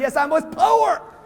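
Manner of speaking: proud, high, drawn-out voice. Coaching the audience on how to answer, the speaker demonstrates it: proud. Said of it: "Say it like you're proud".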